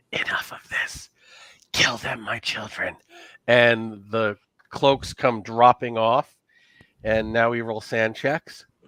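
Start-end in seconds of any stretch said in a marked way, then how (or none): 0.1-2.9 hoarse, breathy, whispered rasp. Game master voicing the mother figure ordering her children to attack: rasping. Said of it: "she rasps out".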